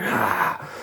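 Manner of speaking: high-pitched mild mock yell. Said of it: "he was just screaming and shouting, hallucinating".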